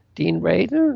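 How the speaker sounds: high, croaked-out word. Retelling how a man opening the door greeted the speaker by name, imitating a croak. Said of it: "he kind of croaked".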